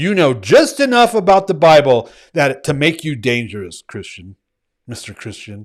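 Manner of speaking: exasperated, fed-up tone. Speaking to listeners about something that happens weekly, frustrated. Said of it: "Why do I sound so frustrated?".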